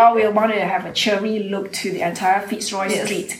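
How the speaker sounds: ordinary talk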